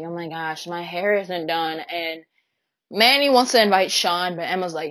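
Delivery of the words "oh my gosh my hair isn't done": plain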